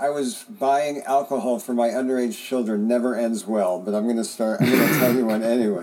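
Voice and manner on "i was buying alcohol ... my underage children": ordinary delivery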